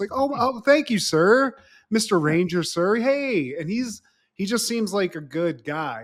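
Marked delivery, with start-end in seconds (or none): 0.1-3.5 overly courteous, high customer-service polite voice. Retelling how a man talks to the Rangers, imitating customer-service politeness. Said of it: "just like customer service".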